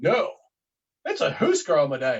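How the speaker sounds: play-acted, swooping, condescending talking-down tone. Retelling a match, the speaker quotes his own reply to an opponent: mock 'you're an idiot' tone. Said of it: "that sort of "you're an idiot" kind of tone".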